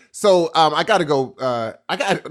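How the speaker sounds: normal talking voice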